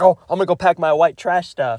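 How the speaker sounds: put-on thrilled, eager voice, fast excited chatter. Retelling how Simon reacts when Trent invites him along, Simon's put-on excited voice. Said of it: "Simon gets so excited".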